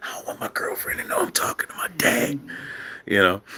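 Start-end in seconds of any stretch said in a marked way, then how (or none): 0.0-2.4 hushed, breathy whisper under the breath. Retelling a son's sneaked phone call to his father: imitating son whispering. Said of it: "why you whispering, son?".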